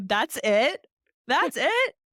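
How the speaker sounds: laughing while talking. Reacting to another speaker's surprising result, laughing while talking. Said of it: "I'm literally cracking up right now".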